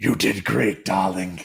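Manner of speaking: deep, rough, low rumbling dragon voice. Speaker voices the dragon Nareem once the foe is dead, Nareem's deep dragon voice. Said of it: "Nareem in her deep in her deep dragon tone".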